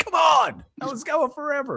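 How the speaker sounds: acted, very high-pitched, fed-up, mad tone. Retelling a fellow actor's complaint after a long dance take: imitating someone mad. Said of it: "He was so mad at the end".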